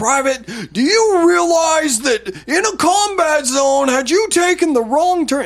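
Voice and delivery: shrill, very high, furious screaming like a drill sergeant. Retelling how the sergeant major screamed at him at his car window, imitating his screaming. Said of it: "And he's just screaming at me".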